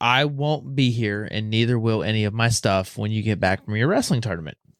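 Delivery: ordinary delivery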